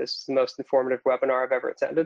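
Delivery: ordinary delivery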